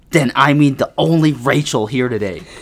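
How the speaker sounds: sharp, clipped voice. Narrator reads Pastor Matt's reply to kids asking which Rachel: sharp voice. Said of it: "Pastor Matt said in a sharp voice".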